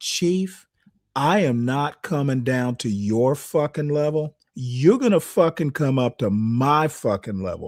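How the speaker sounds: put-on furious, angry outburst voice. Retelling an argument with a chief: imitating his own furious retort. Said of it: "I said it just like that".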